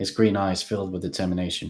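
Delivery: ordinary delivery, nothing marked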